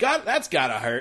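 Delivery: loud, blurted-out yell. Correcting the others on how the scene went: imitating George yelling. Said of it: "He just yells".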